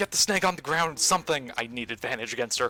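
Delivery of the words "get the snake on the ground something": full-throated, high, loud yell. Voicing a character during a fight, calling out to allies: yelling. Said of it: "she's just gonna yell".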